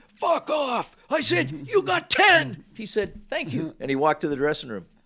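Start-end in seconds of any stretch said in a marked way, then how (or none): 0.1-0.9 hollered at full tilt, pitched high. Recounting how a coach answered him, retelling a yell. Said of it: "He yelled".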